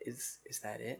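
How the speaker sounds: very quiet, hushed, held-down voice. Retelling a reply to a decision, very quietly: quietly retelling a question. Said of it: "I very quietly was just like".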